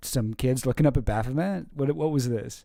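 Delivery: ordinary delivery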